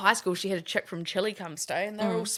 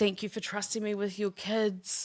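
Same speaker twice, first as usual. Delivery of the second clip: put-on tearful, crying voice. Retelling a thank-you speech someone made while bursting into tears: imitating someone crying. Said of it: "She was just crying".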